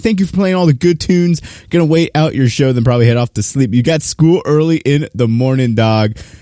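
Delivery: ordinary delivery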